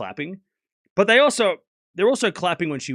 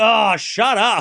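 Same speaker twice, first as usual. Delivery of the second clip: mock exasperation, higher and louder; 3 semitones higher, 5 dB louder than usual. Retelling a player's reaction to a fan's yell, mock exasperation. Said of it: "She's like".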